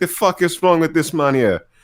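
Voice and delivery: put-on spoken in a Jamaican accent. The speaker imagines the Predator speaking, as a Predator with Jamaican accent. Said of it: "the Predator speaking like with like a Jamaican accent".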